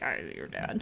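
barely audible whispered mumble. Retelling a movie scene where Yoda answers Luke: mumbling as Yoda.

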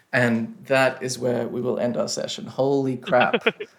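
plain

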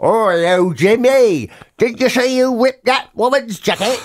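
put-on old-fashioned London policeman accent. Retelling a podcast where actors played old policemen: imitating English copper accents. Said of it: "doing accents of English coppers".

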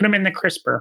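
high cartoon frog puppet voice. Asked to say it in the voice during a game, as Kermit the Frog voice. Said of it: "Kermit E. Frog".

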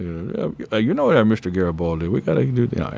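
slow mumbling through a barely open mouth. Showing how a man who mumbles a lot talks, mumbling imitation. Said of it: "he mumbles a lot. He talks kind of like this".

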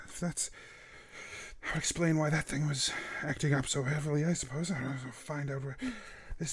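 whispered muttering under the breath. Retelling a scene where he flips through pages, muttering under his breath. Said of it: "he's like sort of muttering under his breath".

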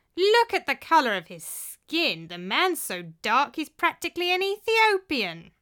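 high, loud, triumphant exclamation. Nasidianus, seizing on his companion's remark about Rufus's skin: exclaiming triumphantly. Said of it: "exclaimed Nasidianus triumphantly".

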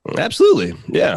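voice suddenly jumps to very high pitch. Asked whether he is an IPA guy, answering with his voice jumping an octave. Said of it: "my voice just went up an octave".

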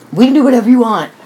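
loud, lame, passive-aggressive tone. Retelling a man's reply about plans: imitating passive-aggressive reply. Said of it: "the most lame-ass passive-aggressive bullshit ever".

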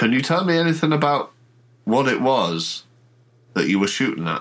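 turning quite stern and probing. Voicing a character who looks towards the door: suddenly stern. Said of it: "suddenly goes quite stern".

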